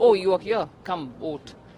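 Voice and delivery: ordinary talk, nothing marked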